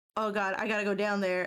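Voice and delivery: put-on anxious, panicked, scared voice. Retelling own reaction while watching horror games: imitating own anxious panic. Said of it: "I get really bad anxiety 'cause I'm just like".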